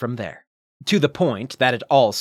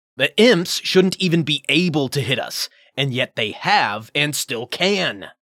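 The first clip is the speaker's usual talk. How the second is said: growled, angry delivery; 3 semitones higher than usual. A crewman answers a newcomer's suggestion during a fight, growling. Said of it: "he growled in turn".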